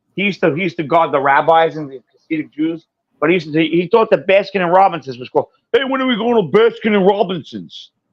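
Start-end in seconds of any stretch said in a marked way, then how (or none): 5.8-7.9 dopey, dim-witted dumb-dog voice, pitched up. Recalling a man who guarded the rabbis, imitating Joe's dumb-dog voice. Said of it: "he talked like the dumb dog".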